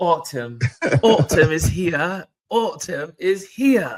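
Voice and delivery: loud, put-on British accent coming out. Speaker chatting with the other speaker about sweater weather: british accent. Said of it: "British accent comes out".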